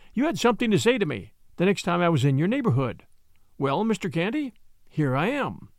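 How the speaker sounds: ordinary delivery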